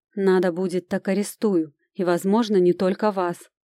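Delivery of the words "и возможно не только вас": ordinary delivery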